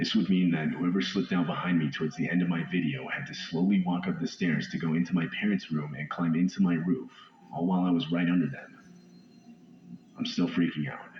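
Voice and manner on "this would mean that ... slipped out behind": ordinary delivery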